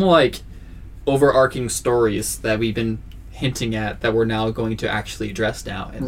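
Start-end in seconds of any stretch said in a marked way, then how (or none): none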